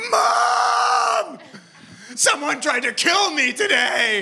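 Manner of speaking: very high, slow scream, word "mom" stretched long. Speaker recounts running home calling out to mom, retelling own screaming. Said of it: "I'm screaming like".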